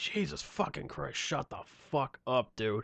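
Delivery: fed-up, exasperated, angry whispered outburst. Retelling snapping at a loud nerd behind them: imitating being pissed off. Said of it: "eventually I just got pissed off".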